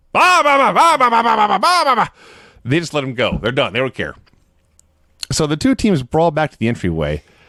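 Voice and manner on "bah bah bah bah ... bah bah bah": high, loud barking like a dog. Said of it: "Vince just starts barking".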